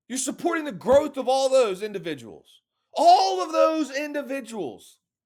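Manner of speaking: pumped-up, fired-up, rapid-fire excited delivery. Talking up Mechanics of Faith to listeners, hyped near-yelling. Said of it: "You may think I'm yelling".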